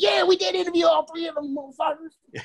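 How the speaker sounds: put-on, shrill, very high, excited yell. Imitating Brian during a wrestling talk: imitating Brian yelling. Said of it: "He's yelling right now".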